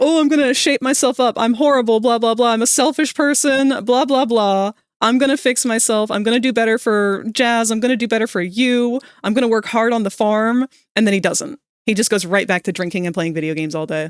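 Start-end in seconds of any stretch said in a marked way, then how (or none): 0.0-10.7 mocking imitation, slower. Complaining about a man's behavior, doing a mocking imitation of him. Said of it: "He's all like".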